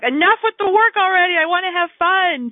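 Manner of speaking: high, loud, cranky fairy whine. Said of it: "I call her my inner fairy".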